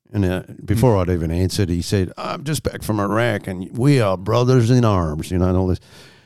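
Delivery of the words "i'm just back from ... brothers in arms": heavy, slow Southern American drawl, laid on thick. Retelling what a big guy at a bar asked: thick Southern accent. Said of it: "Southern accent was so thick".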